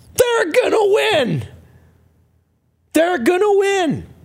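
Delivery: put-on, shrill, very high, swooping top-of-lungs yell. Retelling jumping off his couch, he acts out yelling at the top of his lungs. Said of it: "I yell at the top of my lungs".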